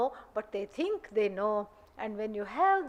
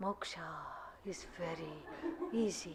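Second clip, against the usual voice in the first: mesmerizing, breathy, hushed, hypnotic guru whisper; 7 semitones lower, 14 dB quieter than usual. Showing how one must change voice to win followers, mesmerizing, hypnotizing voice. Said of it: "it has that kind of a mesmerizing, hypnotizing quality".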